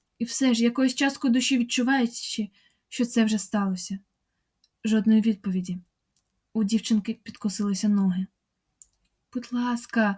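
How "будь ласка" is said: hushed whispering. Narrator reads the girl Marta begging someone who has gone, whispered. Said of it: "прошепотіла вона".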